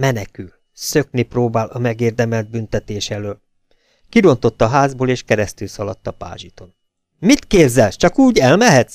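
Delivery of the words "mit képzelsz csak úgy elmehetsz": high-pitched, loud, screeching outburst. A sister-in-law runs across the lawn after the fleeing driver; shrieking. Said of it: "visította".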